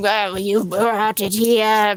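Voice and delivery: taunting, mocking tone in a slow drawl. Relaying what a creature says to the party, mimicking its voice: mocking imitation of the creature. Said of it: "the way you're speaking kinda sounds like you're mocking it".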